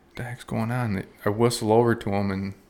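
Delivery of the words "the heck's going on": put-on whisper, higher and quieter. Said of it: "they're whispering".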